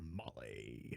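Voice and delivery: rough, creaky, rasping character voice. Quoting a key phrase of a game character in his voice: Brimstone voice. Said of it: "I can do his voice pretty spot on".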